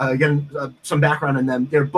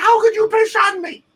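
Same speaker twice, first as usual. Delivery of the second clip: mock angry man yelling, very high pitch; 3 dB louder than usual. Retelling a man on a train yelling at the grandmother: imitating a man yelling. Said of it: "is yelling at her".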